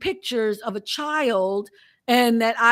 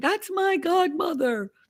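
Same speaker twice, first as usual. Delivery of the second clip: put-on high, shrill child's scream; 6 semitones higher than usual. Recalling what the poor kid screamed: imitating a kid screaming.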